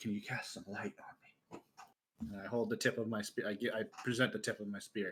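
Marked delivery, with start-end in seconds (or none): 0.0-1.6 close, soft, breathy whisper. Asking a companion quietly in the dark for light: whispering. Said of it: "I whisper".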